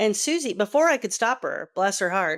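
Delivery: ordinary talk, nothing marked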